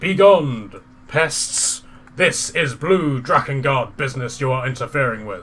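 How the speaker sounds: huge, big, loud roaring dragon voice. The narrator voices a massive blue dragon crashing down before the group, big roaring dragon voice. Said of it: "It lets out in a big roaring voice".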